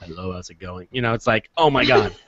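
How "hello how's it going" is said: dull, flat, level, unvarying monotone. Showing how a person with a monotone voice greets you, monotone voice. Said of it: "has a monotone voice".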